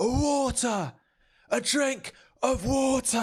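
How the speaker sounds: mock shrill, very high, slow, drawn-out exasperated yell. Retelling ordering water at a burger counter: imitating self losing temper. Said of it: "I started losing it".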